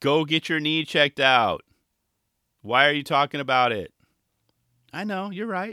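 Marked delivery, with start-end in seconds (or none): 0.0-3.9 loud screaming voice. Speaker imagines a listener screaming at him, imitating his wife screaming. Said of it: "screaming in my wife's voice".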